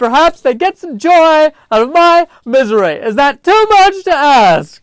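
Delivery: very high, loud wail on the verge of crying. Speaker performs an impression of someone close to tears, imitating someone about to cry. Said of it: "my impression of someone who is about to cry".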